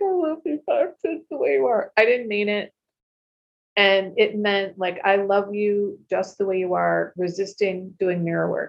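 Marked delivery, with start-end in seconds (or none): 0.0-1.9 acted, high-pitched tearful voice, words broken by sobs. Recalling doing mirror work, acting out his past self at the mirror: retelling own crying, sobbing. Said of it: "I'd be like crying, sobbing".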